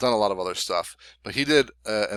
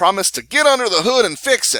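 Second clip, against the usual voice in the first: put-on Texan politician voice, higher and louder; 11 semitones higher, 8 dB louder than usual. Describing a candidate's campaign promise, doing a Ross Perot impression. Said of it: "That's my Ross Perot impersonation".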